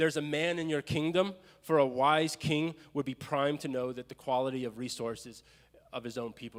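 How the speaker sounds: ordinary talk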